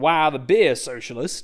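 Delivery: deliberately bad, put-on American accent. Reading a passage aloud to listeners, in an American accent. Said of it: "I'm not doing that whole thing in my American accent".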